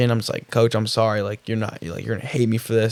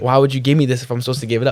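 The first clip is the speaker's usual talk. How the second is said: put-on pleading, arguing tone. Retelling a prayer while arguing with god: retelling arguing with god. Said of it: "arguing with them".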